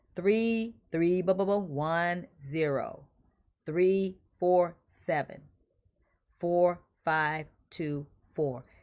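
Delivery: very slow, deliberate, digit-by-digit reading. Repeating a text number for viewers after saying he should slow down: slowing down. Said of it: "I should slow down".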